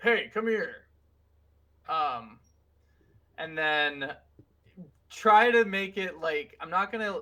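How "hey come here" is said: loud called-out voice. Calling up to others in character: yelling up to someone. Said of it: "I'm going to yell up".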